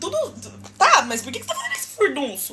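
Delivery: ordinary talk, nothing marked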